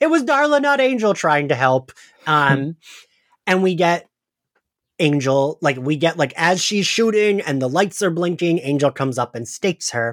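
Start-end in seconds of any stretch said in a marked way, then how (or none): 0.0-1.1 sudden, high-pitched, shrill yell. Recapping a TV episode, acting out Willow shouting. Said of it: "Willow like immediately shouting".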